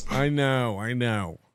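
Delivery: low energy, deflated. Answering another speaker's praise after a joke, low energy. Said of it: "Pick up the energy".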